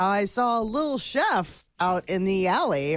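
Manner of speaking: normal talking voice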